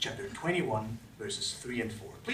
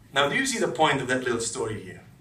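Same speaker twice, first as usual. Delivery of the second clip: plain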